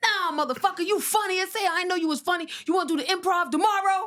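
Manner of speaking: very high-pitched, loud, aggressive yelling. Speaker retelling Spike complimenting them, imitating Spike yelling. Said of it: "Why you yelling at me like this?".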